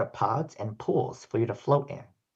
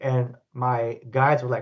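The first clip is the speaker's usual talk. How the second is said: plain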